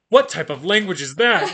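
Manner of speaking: very loud, high, prissy and fussy robot voice. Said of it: "then you have C three P O, like, talking".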